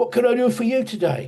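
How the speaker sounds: put-on very high-pitched voice with strong Cockney accent. Retelling what a tailor said to the speaker's mother in a shop, imitating a cockney accent. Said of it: "really Cockney sort of".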